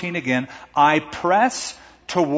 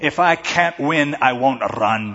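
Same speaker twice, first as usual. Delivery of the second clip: huffy, very slow Scottish brogue; 3 semitones lower than usual. Retelling a scene from the movie Chariots of Fire: huffy Harold Abrahams in Scottish brogue. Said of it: "he gets all huffy and he says in his Scottish brogue".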